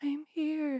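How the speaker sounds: tiny, small little voice. Retelling how someone answered during a prayer session: imitating a little voice. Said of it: "there was this little voice that was like".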